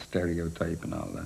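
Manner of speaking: condescending, dismissive tone. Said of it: "we kind of condescend to it by saying".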